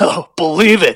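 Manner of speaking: put-on baritone voice. Trying out a line as Hud: Hud impression. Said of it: "I gotta work on my hud".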